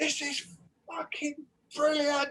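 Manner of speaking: very high, shrill, full-throated, top-of-the-voice shout. Speaker recalls a man in headphones at a hi-fi demo; retelling a full-voice shout. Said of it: "shouting at the top of his voice".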